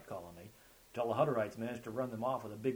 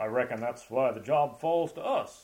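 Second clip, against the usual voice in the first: booming, grand, very loud rumbling hero voice; 10 dB louder than usual. Riley answers his companion's outburst about moving a grizzly: rumbling mock-hero voice. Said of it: "rumbling in one of his mock hero voices".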